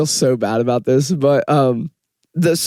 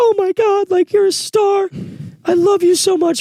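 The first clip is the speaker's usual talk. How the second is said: put-on sobbing, very high, gushing. Retelling a parent's reaction after a show: imitating mom sobbing. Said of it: "my mom's, like, sobbing".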